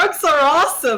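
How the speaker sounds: loud, high shout at full volume. During an in-character bit about what to tell kids, a performer is shouting very loudly. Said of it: "I just shouted out very loudly".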